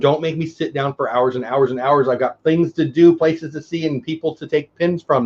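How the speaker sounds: plain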